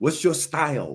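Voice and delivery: put-on Chinese accent. Bridging talk of systems and martial arts: Bruce Lee impression with Chinese accent. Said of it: "I don't know why you use a Chinese accent right there".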